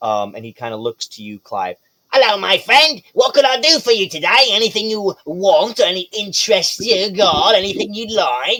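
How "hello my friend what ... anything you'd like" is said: high-pitched little kobold creature voice. Voicing a little kobold merchant greeting a player: Timon the kobold merchant voice. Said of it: "He happens to be a little kobold".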